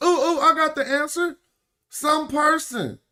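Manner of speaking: squeaky, very high fifth grader voice. Discussing a word, the speaker acts out a fifth grader answering in a little kid voice. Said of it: "We say it in our little kid voice".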